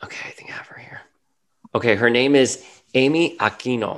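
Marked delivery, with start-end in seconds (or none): 2.0-4.0 Cuban Spanish pronunciation, slower. Looking up the actress who plays the therapist, cuban spanish pronunciation. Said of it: "I'm saying that like my Cuban".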